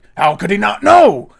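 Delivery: loud, rough, high-pitched outburst. Explaining the impression game rules with an example: Hugh Jackman impression. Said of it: "if I was doing Hugh Jackman".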